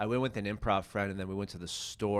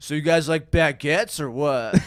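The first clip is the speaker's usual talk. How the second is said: very loud, high-pitched put-on American accent; 8 semitones higher, 13 dB louder than usual. Retelling his joke, voicing a French guy with a really good American accent. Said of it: "here's what he sounds like".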